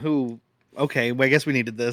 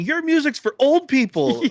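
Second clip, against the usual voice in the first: mock shrill, very high, furious screaming; 11 semitones higher than usual. Describing a fight, speaker imitates the club owner who keeps screaming. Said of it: "keeps screaming".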